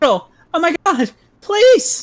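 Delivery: horrified scream, very high pitched. Voicing the narrator's mom in a read story: horrified scream. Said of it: "scream in the most horrified voice".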